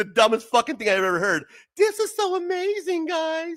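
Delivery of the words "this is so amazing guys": mocking, very high, very slow, drawn-out voice. Quoting another person's words back to mock them, in a mocking high-pitched imitation. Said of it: "You're talking like a fucking bitch".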